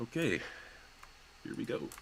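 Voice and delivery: muttered barely aloud, whispered under the breath. Voicing a character starting to draw a scrying circle: said under her breath. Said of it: "just under her breath say".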